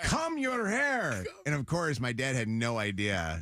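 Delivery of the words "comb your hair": put-on Spanish accent, pitched high. Retelling how the speaker's dad told the kids to get ready for school, imitating his Spanish accent. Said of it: "my dad having a Spanish accent".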